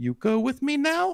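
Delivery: put-on high, slow, eight-year-old little-girl voice.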